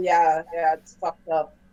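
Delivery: noncommittal, sort of mumbled. Playing a character who answers another about strange events: mumbling. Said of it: "I just sort of mumble".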